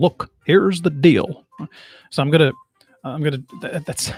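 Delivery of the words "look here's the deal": slow, unhurried, deliberate delivery, leaning into words. Trying out an Obama impression while still working on it: Obama voice. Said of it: "He always starts off with".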